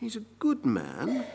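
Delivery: hushed half-whispering voice. A speaker acts out what people in the city say about Jesus, in a hushed half-whisper. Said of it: "Hushed tone, his quiet voice is whispering".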